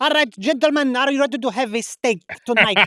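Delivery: heavy put-on Italian accent. Describing an Italian waiter they once had to friends: imitating an Italian accent. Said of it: "whose accent was like just the most like".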